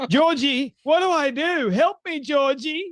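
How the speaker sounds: helpless pleading, pitched high. Mocking how Candace reacts to Alex Jones coming after her: mock Candace voice. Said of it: "And you are just going".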